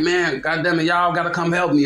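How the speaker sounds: mock yelling. Retelling what a man who got shot shouted afterward: retelling a yell for help. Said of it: "he yelling like".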